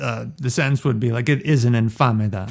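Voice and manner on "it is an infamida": ordinary talk, nothing marked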